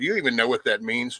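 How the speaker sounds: ordinary delivery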